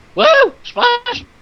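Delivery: wild, crazed, shrill scream, very high-pitched. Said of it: "I don't even know how you did that voice".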